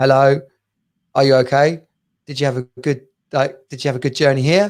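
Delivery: put-on deep, fast London Jamaican accent, Brixton style. Recounting being greeted by a man, the speaker quotes him in deep London Jamaican accent. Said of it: "in his deepest sort of London Brixton Jamaican accent".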